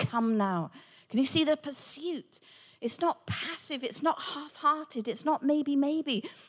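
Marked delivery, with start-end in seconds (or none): 0.0-0.7 put-on desperate pleading voice. Retelling Jairus's request to Jesus: voicing Jairus pleading. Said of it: "I'm pleading".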